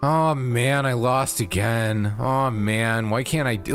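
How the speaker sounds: put-on defeated sumo wrestler voice. Describing a sumo wrestler losing bouts: defeated Shodai imitation. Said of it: "his expression was just so defeated".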